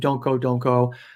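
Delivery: mock anguished pleading tone. Retelling a story of a mother as her son is taken away, imitating teeth-gnashing anguish. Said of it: "is like gnashing her teeth and saying".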